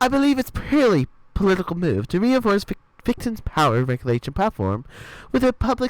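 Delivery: bad, hammy, exaggerated fake British accent. Joining in on doing accents, the speaker uses a bad exaggerated british accent. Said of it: "do a shitty British accent".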